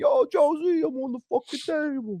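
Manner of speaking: very high put-on Philadelphia accent. Retelling a cousin standing on the deli table: put-on philly accent. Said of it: "that's my go-to Philly thing".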